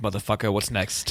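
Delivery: mock aggressive pushiness. Mimicking another speaker's demand for the next topic: imitating an aggressive demand. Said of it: "You're like".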